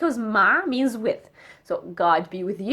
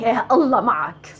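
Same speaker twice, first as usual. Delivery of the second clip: sarcastic, fed-up, negative tone; 4 dB louder than usual. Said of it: "But when we say".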